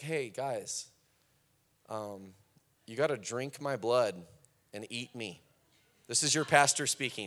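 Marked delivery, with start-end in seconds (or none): 0.0-5.4 slow, casual, matter-of-fact, offhand delivery. Retelling how Jesus would address the crowd, imitating Jesus. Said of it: "he'd, like, got up, be like".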